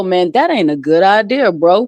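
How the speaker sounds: drawn-out, slow-talking stoner voice. Imitating the pothead in horror movies warning the others: slow-talking pothead voice. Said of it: "they always say it slow".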